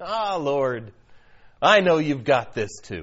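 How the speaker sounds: very low voice with a chuckle running through. Showing listeners how to look up to heaven and speak, with a chuckle. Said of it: "with a chuckle in your voice".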